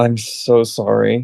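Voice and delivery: faint, barely above a half-whisper. In a role-play, lying in bed next to another character, speaking barely above a half-whisper. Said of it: "barely above a whisper".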